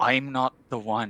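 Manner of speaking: menacing yet apologetic. Speaking in character while turning to leave: menacing yet apologetic. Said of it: "I turn and I say very mena-".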